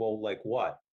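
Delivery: normal talking voice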